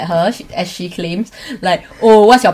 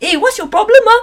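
very high, confrontational shout; 14 semitones higher than usual. Retelling confronting her in the canteen: imitating own past shouting. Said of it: "It's shout, okay?".

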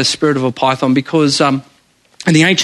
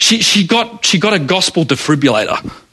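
ordinary talk, nothing marked

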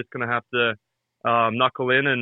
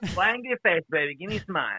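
high, swooping, laid-on put-on Eastern European accent; 6 semitones higher, 4 dB quieter than usual. Showing how he and a friend keep annoying the women, in a Borat impression. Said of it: "doing the Borat expressions".

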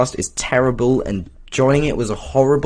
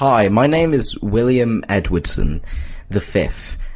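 fake British accent; 3 semitones lower than usual. Introducing themselves in a made-up British Jesus podcast: put-on British accent. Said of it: "what's a stereotypical British name?".

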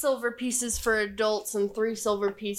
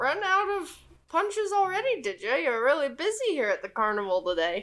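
put-on high, swooping elderly goblin character voice; 5 semitones higher than usual. Voicing an elderly goblin who greets players at a carnival: elderly goblin voice. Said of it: "the elderly goblin puts his little spyglass up and goes".

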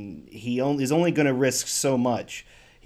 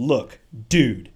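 slight put-on bro voice, louder; 4 dB louder than usual. Retelling a favourite movie line: Neil McDonough slight bro voice. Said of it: "he just slightly goes into a bro voice".

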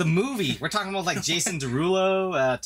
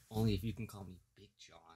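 very hushed, close half-whisper; 8 semitones lower, 14 dB quieter than usual. Retelling what was half-whispered into an ear during a movie: imitating a half-whisper. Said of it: "whispers into my ear".

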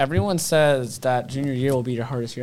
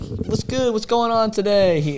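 attempted American southern accent, pitched up; 8 semitones higher than usual. Retelling how he greeted a silent room: attempted southern accent. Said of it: "I tried to do it in a southern accent".

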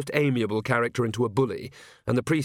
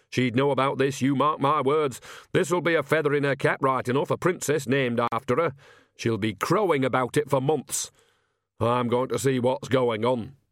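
ordinary delivery

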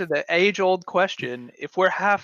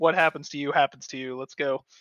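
ordinary talk, nothing marked

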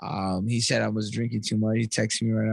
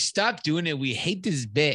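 mock fed-up, slow, annoyed griping; 5 semitones higher than usual. Imitating annoyed listeners who complain about a bit: imitating annoyed listeners. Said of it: "annoyed and they're like".

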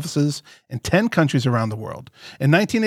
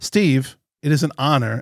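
normal talking voice

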